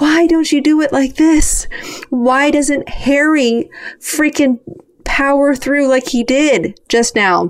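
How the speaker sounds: high-pitched screaming yell. Retelling watching the team dances at home: retelling own screaming at TV. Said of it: "screaming at the T V".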